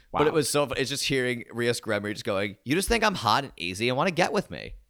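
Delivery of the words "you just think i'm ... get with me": put-on swooping valley girl voice. Describing a show with three valley girls, [name] valley girl voice. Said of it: "talk like valley girls".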